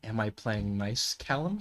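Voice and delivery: barely audible, very quiet, hushed voice. Voicing Mason answering a question quietly: speaking quietly in character. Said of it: "be quietly go".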